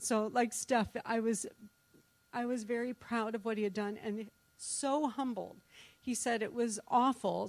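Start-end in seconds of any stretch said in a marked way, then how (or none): 0.0-5.6 emotional, tearful, close to crying. Telling Steph how proud and humbled she was, about to cry. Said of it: "I'm going to cry on this one".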